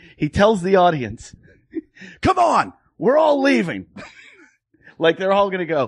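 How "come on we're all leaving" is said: mock very high, shrill, swooping screaming. Retelling an audience member urging the crowd to leave; imitating a man screaming. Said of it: "So he's screaming at me".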